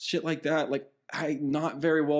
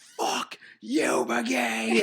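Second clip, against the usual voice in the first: mock top-of-lungs scream, high, raw and drunken; 6 semitones higher than usual. Retelling yelling at a player in the penalty box: imitating a drunken scream. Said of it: "I scream at the top of my lungs".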